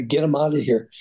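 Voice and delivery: ordinary talk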